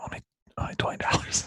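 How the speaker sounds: hushed, whispered voice. Kyle leans forward and pitches the draft guide to viewers, whispering. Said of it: "he's pitching the draft guide while he's whispering".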